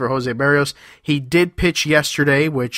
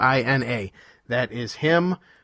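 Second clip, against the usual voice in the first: usual speaking voice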